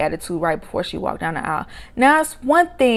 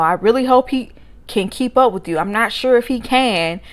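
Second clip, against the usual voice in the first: ordinary delivery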